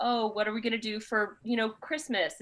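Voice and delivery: normal talking voice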